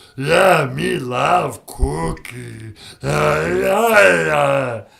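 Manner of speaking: put-on monster voice. Calling in to a podcast as Cookie Monster: Cookie Monster voice. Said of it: "Hey, Cookie Monster".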